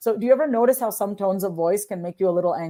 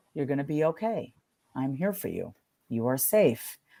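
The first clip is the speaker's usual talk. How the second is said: gentle, soft, calming, soothing reassuring voice; 6 semitones lower, 7 dB quieter than usual. Demonstrating a voice for reducing stress: soothing voice. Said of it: "So that's a more soothing voice".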